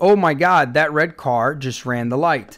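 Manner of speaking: ordinary talk, nothing marked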